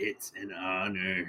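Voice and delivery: very faint, barely-there, feeble weak voice. Speaking a line for their character in a scene: really weak voice. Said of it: "I just say with a really weak voice".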